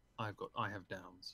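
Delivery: acted low, quiet, flat, expressionless deadpan. Recalling the other person's earlier, less animated version, retelling a deadpan line. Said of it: "It was like deadpan".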